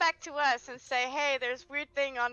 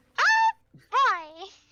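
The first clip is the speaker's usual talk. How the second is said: very high, loud, squeaky squeal; 11 semitones higher, 9 dB louder than usual. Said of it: "You actually do a good Minnie Mouse impression".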